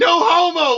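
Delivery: all-out shrill, loud screaming yell. Retelling a prank on a passed-out guy: imitating own past scream. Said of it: "I'm over here screaming".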